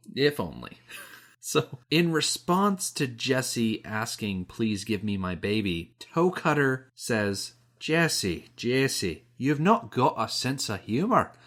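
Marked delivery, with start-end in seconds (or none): 7.8-11.2 put-on Scottish-accented speech. Quoting what Toe Cutter says, in Toe Cutter's Scottish accent. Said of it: "he says it just like that. With a Scottish accent".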